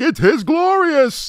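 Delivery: high-pitched villain voice with the voice shaking. Mocking Brian Thompson's performance as the villain, do a shaky-voiced Shao Kahn impression. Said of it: "Just the way his voice is shaking".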